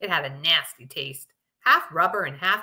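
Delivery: ordinary delivery, nothing marked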